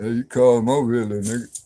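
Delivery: mock-deep put-on voice. Telling a story about a cousin and imitating his deep voice as he calls someone over; imitating a deep voice. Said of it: "He had a deep voice".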